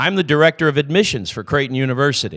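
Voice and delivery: mock, loud announcer style, every word spoken very clearly. Retelling answering a stranger's question on a shuttle, retelling a very clear announcement. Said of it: "and in my clearest voice".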